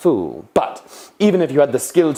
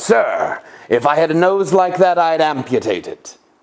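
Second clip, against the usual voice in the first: openly hostile, aggressive, slow and deliberate; 3 semitones higher than usual. Giving examples of insulting a nose in varied tones: aggressive tone. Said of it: "In an aggressive tone".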